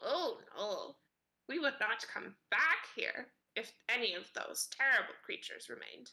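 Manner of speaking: bird voice for a talking crow. A game master voices a crow answering a player's questions, talking crow voice. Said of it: "One flutters over to you and starts pecking at the food in your hand".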